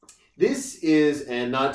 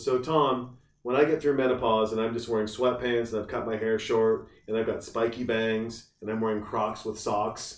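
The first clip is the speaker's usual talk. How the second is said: plain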